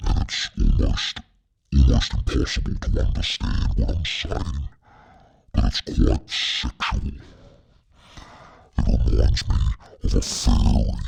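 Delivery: electronically deepened voice. Trying out a new voice effect on the recording: deeper voice effect. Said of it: "voice effect that's way deeper".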